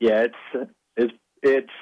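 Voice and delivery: slow, choked-up, stumbling voice catching with emotion. Recalling hoisting the trophy while the national anthem played: getting choked up. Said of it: "I'm getting a little choked up right now".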